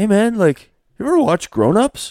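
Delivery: loud dude voice, pitched way up high. Retelling what he asked at Arena Cross: Mike Alessi impression. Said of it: "your best Mike Alessi impression".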